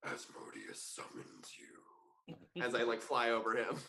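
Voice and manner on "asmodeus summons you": sinister, menacing, evil-sounding whisper. A player speaks telepathically into a devil's head while flying over him, evil voice. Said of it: "I'm gonna put on like an evil voice and go".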